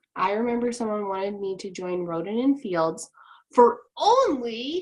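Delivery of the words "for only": slow, loud, drawn-out sarcastic tone. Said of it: "I say this very sarcastically".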